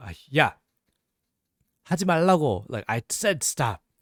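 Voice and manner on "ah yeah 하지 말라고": stern, serious, no-joking tone, loud and slow. Explaining how a girlfriend says stop when she means it: acting out a serious 'stop'. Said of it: "if they're more serious... they change the tone".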